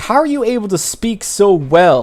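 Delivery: frustrated berating. Retelling how a player cast Speak with the Dead and questioned a zombie; retelling someone berating. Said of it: "he's like berating the zombie".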